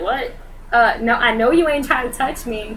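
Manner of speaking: weird, odd dog-like voice. Speaker describes how the pet backs away when people try to touch him, imitating Max's voice. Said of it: "this weird voice in my head of like what I think Max says".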